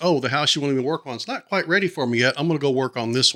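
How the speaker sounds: ordinary delivery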